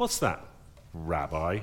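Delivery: very low, deep, soft sneer. Retelling Simon answering Jesus, Simon's mock sneer. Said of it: "You can almost hear the sneer in his voice".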